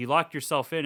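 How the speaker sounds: ordinary delivery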